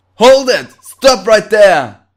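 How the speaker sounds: very loud, high, barked bellowing. A soldier orders someone to halt, bellowing. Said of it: "Who are you bellowing at".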